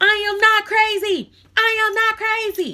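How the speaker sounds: very loud, very high, shrill, slow, drawn-out yelling. Showing how yelling makes someone look crazier: imitating someone yelling. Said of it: "If you're yelling that".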